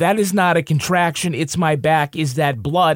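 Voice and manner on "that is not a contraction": usual speaking voice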